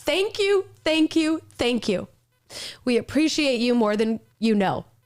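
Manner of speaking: choked up, voice breaking and catching with emotion. A host signing off, thanking veterans who serve, choked up. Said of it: "I'm getting oh. choked up".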